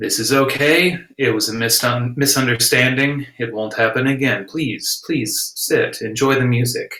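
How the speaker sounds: slow, soothing, calming speech. Voicing a character calming two men with a charm spell: talking slow and soothing. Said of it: "I'll kind of focus in on him and just".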